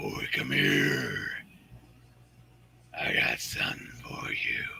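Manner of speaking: hushed, breathy, whispered horror-villain voice. Answering a request for the tall man from Phantasm: Tall Man voice. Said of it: "need that dude, the tall man".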